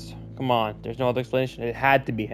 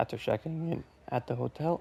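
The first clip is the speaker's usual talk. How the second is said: soft voice, cracking mid-phrase; 7 dB quieter than usual. Narrating a second-person story to listeners: horrible voice crack. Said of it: "that was a horrible voice crack".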